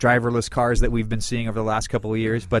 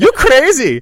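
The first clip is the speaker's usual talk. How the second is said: put-on shrill, very loud, high-pitched Swedish accent; 12 dB louder than usual. Quoting a line from an IKEA commercial, in a Swedish IKEA-commercial accent. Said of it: "Is that your Swedish impression?".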